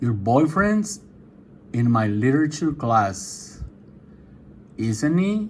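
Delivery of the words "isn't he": pitch rises at the end of isn't he. Teaching an English tag question, rising tone on 'Isn't he?'. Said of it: "Elevo mi tono".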